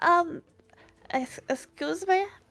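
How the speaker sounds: tiny, very high, small little voice. While the group thinks over their facts, someone interrupts: small voice. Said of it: "you hear a small voice go".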